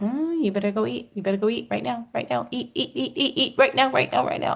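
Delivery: high, sassy little voice. Describing getting hungry, voicing the little inner voice Shauna talks about, acting out sassy inner voice. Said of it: "that sassy little voice that Shauna you talk about, that goes".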